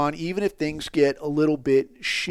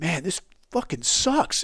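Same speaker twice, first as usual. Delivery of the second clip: glum, disheartened, dejected bummed-out tone; 4 dB quieter than usual. Retelling what an unhappy athlete said during a break: imitating someone bummed out. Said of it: "he's fucking bumming".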